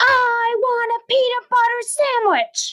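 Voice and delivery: angry, aggressive voice, pitched very high. Demonstrating anger styles for an exercise with kids, in an aggressive, angry tone. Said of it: "in a really aggressive, angry tone".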